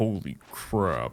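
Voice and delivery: very deep, lowest possible voice. Trying a phrase as requested: lowest possible voice. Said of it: "let me try my lowest voice".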